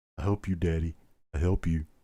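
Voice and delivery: low doggy voice. Speaker voices his dog sitting back there, doggy voice. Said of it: "I'm doing my doggy voice now".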